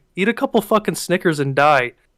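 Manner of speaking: hushed mutter kept under the breath. Retelling insulting a rude man as he walked away, retelling muttering under breath. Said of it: "So under my breath".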